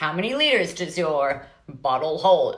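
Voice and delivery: put-on American accent. Speaker acting out shopping around for water bottles, in an American accent. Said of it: "I don't know why I'm talking an American accent".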